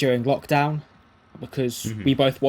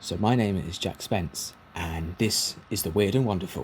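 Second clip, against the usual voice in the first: low, calm, relaxed radio presenter voice; 5 semitones lower, 4 dB quieter than usual. Podcaster shows the voice put on for radio: a calm radio voice. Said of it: "more of a radio calm voice".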